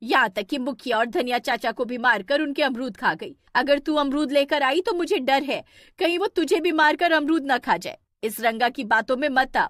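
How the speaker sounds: cross, angry, stern scolding voice. In a story, the mother speaks to her daughter with an angry warning. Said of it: "तभी [name] की माँ [name] गुस्से से बोलती है, / तभी [name] की माँ [name] गुस्से से बोलती है".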